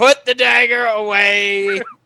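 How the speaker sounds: yell with the word "away" stretched out long. In a role-play scene, a character calls out through the door, yelling. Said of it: "I'm gonna yell out the door".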